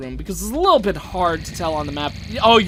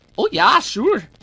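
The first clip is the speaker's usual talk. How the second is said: high-pitched put-on Minnesota accent; 8 semitones higher, 4 dB louder than usual. Explaining an accent picked up from a movie, then demonstrating it: Fargo accent. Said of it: "with that kind of accent with the like".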